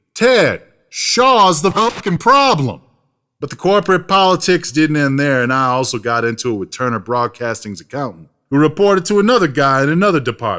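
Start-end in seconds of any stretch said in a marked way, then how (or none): 0.2-2.9 high, slow, drawn-out scream. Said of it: "I wanted to scream".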